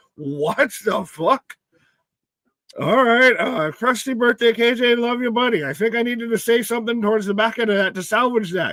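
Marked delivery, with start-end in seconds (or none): 3.7-5.7 rural Canadian voice, higher pitched. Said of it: "turn into somebody from Letterkenny at the end of that message".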